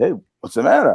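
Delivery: put-on stupid, clueless, innocent-sounding tone. Retelling asking a crying son what is wrong, imitating playing dumb. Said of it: "I act stupid".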